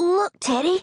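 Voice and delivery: gasped. A six-year-old boy points toward the barn, calling to Teddy, gasped. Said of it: "he gasped".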